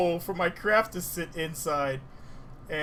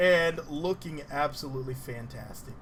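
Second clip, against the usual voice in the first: ordinary delivery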